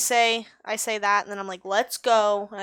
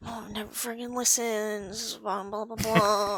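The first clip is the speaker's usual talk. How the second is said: muttered grumbling mumble under the breath; 5 dB quieter than usual. A character walking along a pipe with the group, mumbling under breath. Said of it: "I'm mumbling under my breath".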